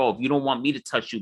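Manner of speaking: imitated, mocking tone. Retelling how Dave Roberts mocked Max Scherzer: imitating Dave Roberts dissing. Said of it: "dissing Max Scherzer".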